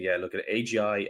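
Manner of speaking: plain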